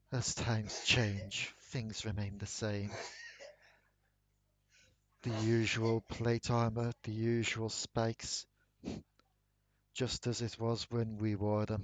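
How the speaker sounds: hushed whispered voice. The game master voices the whispers heard near the armor in the Noxus wing, whispering. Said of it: "You hear a whispering voice again".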